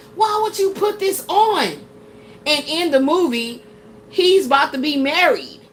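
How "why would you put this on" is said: upset, raised, high-pitched hollering. Retelling yelling at the person who put the movie on, retelling a holler. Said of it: "I was hollering at Ash like".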